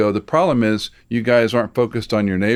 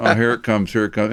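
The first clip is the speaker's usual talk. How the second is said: plain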